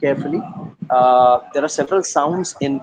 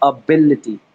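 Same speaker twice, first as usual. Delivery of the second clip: ability, stress hits the bil syllable; 4 dB louder than usual. Teaching word stress to the listeners: stress on bil in ability. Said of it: "So I would stress at that little part called bill".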